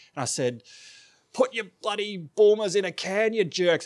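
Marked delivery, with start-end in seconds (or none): 1.4-3.9 put-on drunk, belligerent voice, higher. Retelling a drunk, belligerent talk with a beer rep: imitating own drunk belligerence. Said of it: "I was very belligerent".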